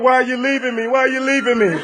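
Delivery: play-acted tearful crying, clingy, whiny pleading tone. Retelling how she was crying and begging: imitating someone crying. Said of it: "she was in here crying".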